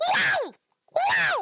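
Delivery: squeaky mushroom character voice. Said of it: "in my Toad voice".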